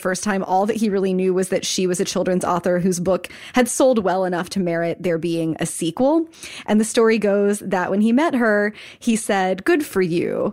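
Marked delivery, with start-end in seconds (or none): 9.6-10.5 mock-condescending tone, much slower. Retelling what a man said on meeting a children's author, mock-condescending. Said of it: "kind of condescendingly".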